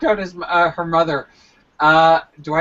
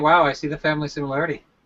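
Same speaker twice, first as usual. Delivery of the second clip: normal talking voice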